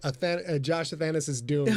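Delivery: ordinary delivery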